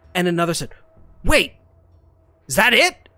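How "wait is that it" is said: stage whisper, loud. Retelling two voices overheard, the second one asking: loud whisper. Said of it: "the sort of loudest wish, whisper".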